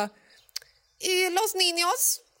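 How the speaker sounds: high, hesitant official-sounding voice.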